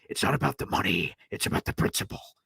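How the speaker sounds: bad villain voice, breathy, hushed half-whisper. Explaining why someone was dumped despite the money, quote the line in a terrible Joker voice. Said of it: "That was a terrible Joker voice".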